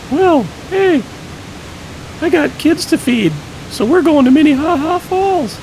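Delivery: very high-pitched character voice, pushed way up. Asked where they're going today, Ed the Gorilla answers in a very high voice. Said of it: "Ed the Gorilla speaks in a very high voice".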